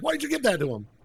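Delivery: angry, very high-pitched complaining outburst. Speaker retells a scene where Bobby gives Carrick the amulet, imitating Eric pissed off. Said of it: "Eric gets all pissed off".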